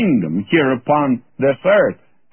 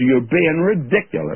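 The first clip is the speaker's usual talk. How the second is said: put-on disdainful British accent; 2 semitones higher than usual. Retelling what a man said to the speaker, mimicking a disdainful British voice. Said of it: "in that British disdainful voice".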